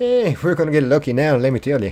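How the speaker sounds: put-on, full-blown Irish leprechaun accent. Speaker goes full-blown leprechaun for the audience, leprechaun accent. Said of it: "I just went full blown leprechaun on you".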